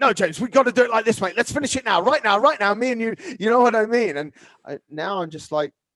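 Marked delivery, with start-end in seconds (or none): 0.0-4.2 impatient, rushed, pushy, pitched-up urgency. Retelling how things were once pushed to finish right now: imitating own past impatient self. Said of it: "Whereas I remember before, I'd be like".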